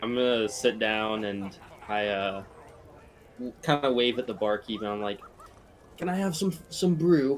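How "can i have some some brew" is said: put-on British accent, pitched up. Playing a character ordering from the barkeep, the speaker uses a british accent. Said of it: "I don't know why I said that British".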